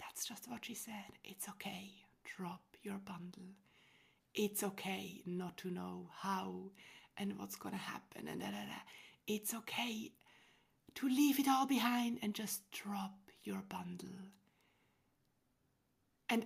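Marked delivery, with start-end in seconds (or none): 1.2-14.1 put-on loving, affectionate voice. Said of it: "she said with that most loving voice".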